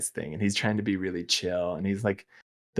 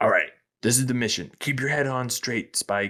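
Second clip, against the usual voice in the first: put-on grouchy, grumpy, gruff character voice; 4 semitones higher than usual. Describing a show character's default mode, imitating a grouchy police chief. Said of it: "I'm kind of like the grouchy police chief".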